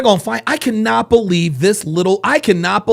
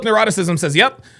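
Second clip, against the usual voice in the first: ordinary talk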